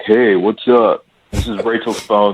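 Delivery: mocking, smug, obnoxious guy voice. Retelling a guy's voicemail greeting on a date's phone: imitating a douchey guy. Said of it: "he sounded like a real douche".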